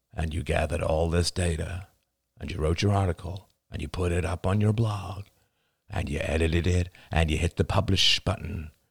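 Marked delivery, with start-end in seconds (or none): none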